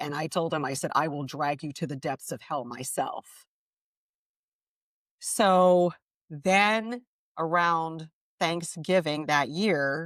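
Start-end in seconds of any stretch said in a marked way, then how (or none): 0.9-3.2 play-acted fierce, menacing, vicious and angry. Retelling how she threatened a shadow in the bedroom: imitating her own vicious angry threat. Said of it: "I was very vicious, very angry".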